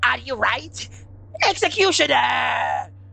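high-pitched, creaky, rough character voice. Reading chat aloud and trying out a Swap Papyrus voice. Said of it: "I'm butchering this one".

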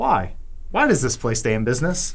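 usual speaking voice

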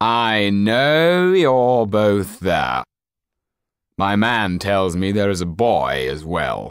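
slow, loud calling out. Reading a story aloud, the count calls out to people hiding in a library, calling out. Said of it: "[name] called out".

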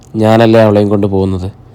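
ordinary delivery

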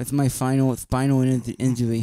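put-on toddlerish boxer voice. Doing an impression of Mike Tyson for the other speaker: Mike Tyson impression. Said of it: "I make him sound like a toddler, Mike Tyson".

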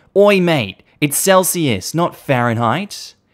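high, drawn-out shout carrying over a distance. Retelling calling across a pool to a confused man: retelling a shout. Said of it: "So I shout over".

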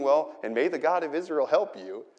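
imitated mocking delivery. Retelling King Saul's words to David: mocking Saul, sarcastic. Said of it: "this mocking".

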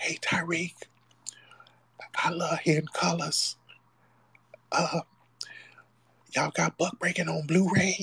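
soft whisper, pitched high. Imitating callers who call up during the lives: imitating someone whispering. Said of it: "y'all call up and be whispering".

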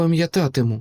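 hushed whisper. Narrator reads Brin answering the vanished druid by the river: whispering. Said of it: "прошепотіла вона".

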